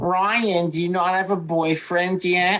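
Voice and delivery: put-on grandmother voice.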